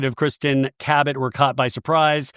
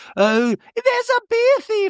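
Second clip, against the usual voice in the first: put-on rambling voice, very high and slow.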